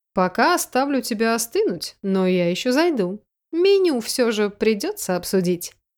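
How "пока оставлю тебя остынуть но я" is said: ordinary delivery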